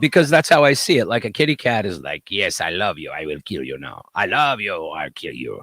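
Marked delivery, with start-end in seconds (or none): 2.3-5.6 odd, weird put-on Eastern European accent. Voicing a cat that loves and threatens: weird eastern european accent. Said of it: "a weird, like, Eastern European kind of".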